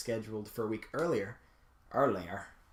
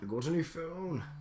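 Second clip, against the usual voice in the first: high, teasing, mocking put-on voice; 5 semitones higher than usual. Repeat the line about the phone back to the other person, mocking the way someone talks. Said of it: "Are you making fun of the way I talk?".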